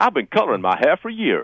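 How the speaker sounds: fake American southern accent. Taking a turn at repeating a quote, the speaker does a Hillary Clinton impression. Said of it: "Let me try that".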